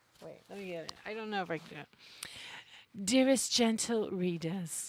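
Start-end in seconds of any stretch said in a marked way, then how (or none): 3.1-4.9 very loud, booming put-on British accent. Trying to read a phrase aloud in an attempted British accent. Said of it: "read it with a British accent".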